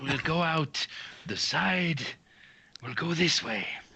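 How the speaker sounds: failed, too-loud whisper. Playing a character sneaking out who tries to whisper: failed whisper. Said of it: "I think you think you're whispering".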